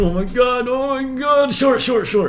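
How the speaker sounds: very high, loud, nervous panicked voice.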